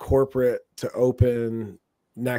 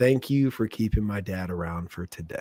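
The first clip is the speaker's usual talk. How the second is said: whispered words; 3 semitones lower than usual. Speaker retelling what a man's daughter whispered in their ear at her wedding reception: retelling a whisper. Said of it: "she whispers in my ear".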